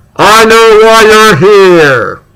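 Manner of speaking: loud called-out shout, stretched long. Retelling how the man the speaker was looking for loudly announced himself: retelling a loud shout. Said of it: "he very loudly goes".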